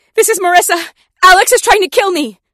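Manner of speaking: piercing, shrill, full-volume, terrified shout. Reading a story where a recorded call for help plays: frightened shouting. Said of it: "The frightened voice that rings out".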